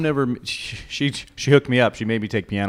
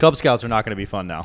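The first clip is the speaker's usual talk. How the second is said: normal talking voice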